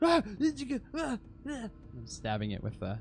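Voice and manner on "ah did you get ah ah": overdramatic, hammy, very high-pitched yelling. Voicing a character still attacking a vanished shadow: overly dramatic attack cries. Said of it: "really trying to sell it".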